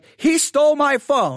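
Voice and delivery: play-acted woman's voice, high, drawn-out accusing yell. Retelling a woman accusing a man of stealing her phone, imitating her yelling. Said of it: "and she's yelling at the".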